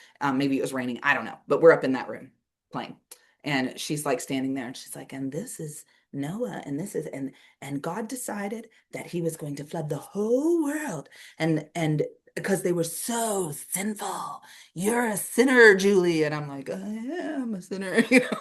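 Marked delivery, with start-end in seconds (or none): 5.1-16.2 slow, dramatic, put-on storytelling tone. Recalling a girl who told the Noah story while they played upstairs: imitating someone being dramatic. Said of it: "she'd be all dramatic in it".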